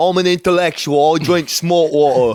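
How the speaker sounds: put-on, fake British accent. Joking with a friend about having a British accent, put-on British accent. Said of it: "If we had British accents".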